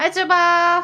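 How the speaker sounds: shouting. The speaker greets someone who cannot hear them, yelling. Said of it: "I'm yelling at you".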